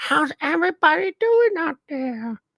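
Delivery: high-pitched put-on puppet voice. Wondering how Elmo talks while quoting a tweet: Elmo voice. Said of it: "does Elmo talk like this?".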